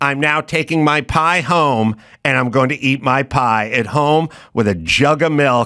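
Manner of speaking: plain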